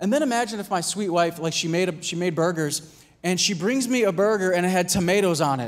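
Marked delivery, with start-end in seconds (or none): none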